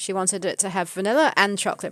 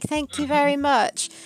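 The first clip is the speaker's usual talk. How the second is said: put-on high, super polite, well-mannered little kid voice; 7 semitones higher than usual. Retelling a customer's thanks for an ice cream: imitating a super polite child. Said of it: "they were all super polite".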